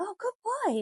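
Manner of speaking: very high-pitched voice. Speaker showing how to reward a calmer dog: high voice praising a dog. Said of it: "like that, you know, high voice".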